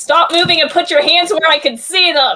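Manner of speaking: authoritative, stern police-style voice. Pointing a pistol at Ross to intimidate him: shouting like a cop. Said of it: "and I say".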